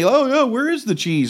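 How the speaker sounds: mock playful joking. Waiting for Steve to arrive, retelling a joking remark you made. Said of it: "I'm jokingly".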